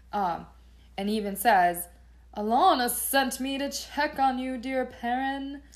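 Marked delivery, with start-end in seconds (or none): 2.3-5.6 high, loud arrogant talk. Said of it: "I really picture him with the arrogant talk".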